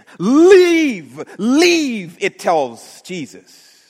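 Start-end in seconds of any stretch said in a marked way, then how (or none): 0.2-2.2 very loud, high, shrill raging scream, "leave" stretched. A narrator retelling a demon crying out to Jesus through its host: screaming in rage. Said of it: "It keeps repeating over and over again".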